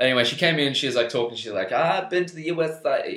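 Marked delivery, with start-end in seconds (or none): 1.7-3.2 put-on girl's voice, higher. Retelling what a girl said when she came in: impression of the girl. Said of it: "this is my impression again".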